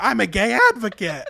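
high, loud, shrieked camp scream. Retelling how a woman screamed her reply: imitating Danielle screaming. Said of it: "but her screaming".

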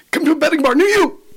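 very high, fast-talking, rattled-off ad announcer voice. Recalling a new england commercial, the speaker does its announcer's closing line, fast-talking announcer. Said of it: "he talked really fast and he would end with".

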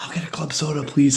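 soft, whispered voice. Retelling ordering at a comedy show while staff talk loudly: whispering back an order. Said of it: "and then you whisper back".

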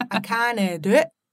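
practised, attempted Scottish accent. A woman tries out the Scottish accent she's been practicing: attempted Scottish accent. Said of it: "She's been practicing her Scottish accent".

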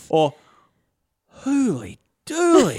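put-on Australian accent. In a role-play scene, a player voices Ron, Aussie Ron accent. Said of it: "But more Aussie, like an Aussie Ron".

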